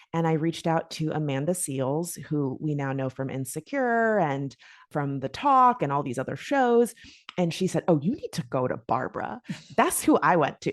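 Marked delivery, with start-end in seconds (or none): 7.8-9.4 lively, knowing, animated voice with swooping pitch. Retelling advice about where to go, in an Amanda Seales impression. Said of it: "That's my Amanda Seales impression".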